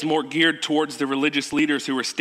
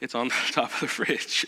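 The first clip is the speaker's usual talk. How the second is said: acted-out sheepish tone, lower and quieter; 3 semitones lower, 6 dB quieter than usual. Retelling how you had to answer Amber: retelling a sheepish answer. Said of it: "I had to sheepishly say".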